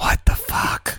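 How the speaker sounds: soft, breathy whisper under the breath. In a tabletop game, Yuck Duck leans over to Spider-Bait; Yuck Duck whispering. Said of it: "he just whispers in common to him".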